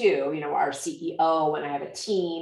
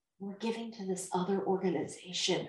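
very hushed, quiet, sheepish, embarrassed tone; 3 semitones higher, 10 dB quieter than usual. Speaker imitates donors they talk to: imitating a quiet voice. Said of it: "And they'll say it quietly".

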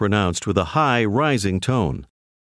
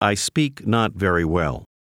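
usual speaking voice

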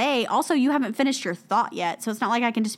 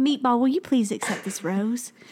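put-on Southern accent. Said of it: "it needs to be a Southern accent".

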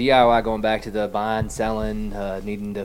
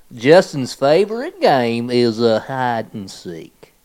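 put-on drawling Southern accent; 3 semitones higher, 7 dB louder than usual. Reading out a game card line to friends, in a Southern drawl. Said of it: "Southern drawl".

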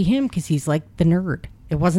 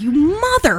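put-on old woman voice, pitched higher; 9 semitones higher, 3 dB louder than usual. Imitating Grandma Rose reacting to a movie scene: imitating Grandma Rose. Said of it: "Grandma Rose is like".

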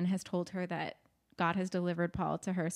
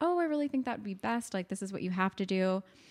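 very calm, cool, collected and even voice. Retelling a scene, quoting Annie insisting it would be best: imitating Annie's very calm voice. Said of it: "she's keeping her voice very calm".

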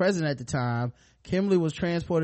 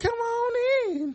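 put-on creepy little old man voice, higher pitch. Joking about a school bus driver, doing Herbert from Family Guy. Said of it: "Herbert the pervert".

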